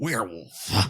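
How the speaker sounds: werewolf said with a hard, bitten-down final f. Imitating how Gary Busey says werewolf: Gary Busey saying werewolf, hard F. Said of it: "Gary Busey says, like".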